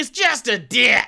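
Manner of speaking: loud, high, stretched-out hollering yell. Retelling a man who yelled at the group while they ran, retelling a yell. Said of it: "Like he just yelled like".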